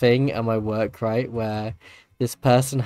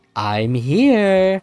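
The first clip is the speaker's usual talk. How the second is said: eerie, creepy, recorded woman's voice, drawn-out; 8 semitones higher, 5 dB louder than usual. Retelling how a smartwatch answered find my phone: imitating a creepy lady voice. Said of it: "this creepy lady, like, that's her voice".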